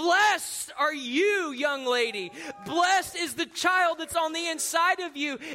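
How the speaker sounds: mock light, mild, proclaiming hollered call. Retelling what Elizabeth says when Mary arrives: retelling a holler. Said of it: "She hollers".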